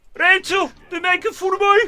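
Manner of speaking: put-on Brummie accent. Showing friends how Perry sounds: imitating Perry's Brummie accent. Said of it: "his Brummy accent".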